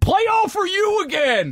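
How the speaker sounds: put-on very high, drawn-out drunken yell. Joking about a coach who gets drunk at a concert: imitating Urban Meyer yelling drunk. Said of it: "just gets drunk and just starts yelling".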